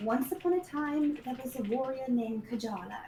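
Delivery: soft, hushed half-whisper. Reading a story over a dead goblin's body in character: soft half-whisper. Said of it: "I'm going to kind of whisper".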